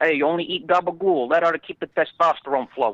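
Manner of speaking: tough-guy mob boss voice, pitched a bit high. Asked to do a Tony Soprano impression, the speaker gives it a try. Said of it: "Can you do a Tony Soprano impression?".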